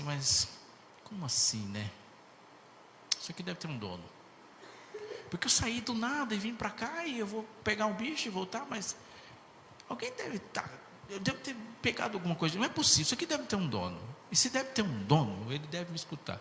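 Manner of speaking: high, rising, puzzled hunter-style voice.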